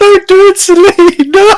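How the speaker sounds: shrill, full-lung, booming drawn-out shout. Retelling how Ryan shouted in the scene: imitating Ryan shouting. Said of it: "Ryan shouting at the top of his lungs".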